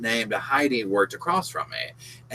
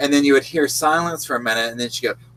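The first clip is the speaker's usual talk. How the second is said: usual speaking voice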